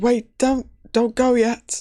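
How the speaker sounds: weak, frail, feeble voice, pitched high. Voicing a hooded figure reaching out to the party: feeble voice. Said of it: "you hear kind of a feeble voice saying".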